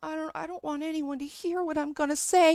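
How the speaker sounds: mocking, put-on soft, scared voice. Mocking Opal talking softly into the microphone like she's scared: imitating Opal's soft scared voice. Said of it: "talks really softly into the microphone".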